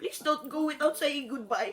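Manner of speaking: usual speaking voice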